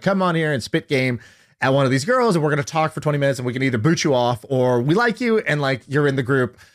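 ordinary talk

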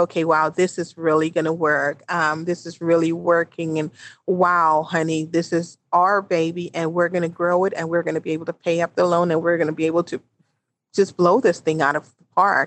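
plain

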